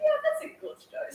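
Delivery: high, laughing, amused voice.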